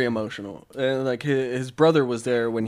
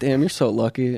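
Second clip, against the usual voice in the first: ordinary talk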